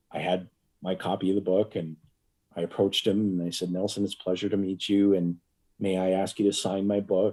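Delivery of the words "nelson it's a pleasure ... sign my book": ordinary delivery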